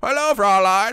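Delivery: silly, goofy, high-pitched put-on voice. Speaker says the word Fraulein the way the speaker always wants to: goofy put-on voice. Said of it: "I always want to say it in that voice".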